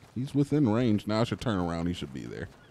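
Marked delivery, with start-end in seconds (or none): none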